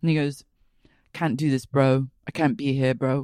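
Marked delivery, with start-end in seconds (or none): 1.1-3.2 put-on northern English accent. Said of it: "you make him sound like he's from the north of England".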